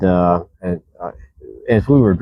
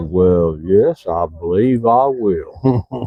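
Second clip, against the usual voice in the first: very slow, deep Mississippi southern baritone drawl. Retell the answer when you offered a seat in your air-conditioned car, in Mr. Foote's rich southern baritone. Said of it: "In that rich southern baritone of his".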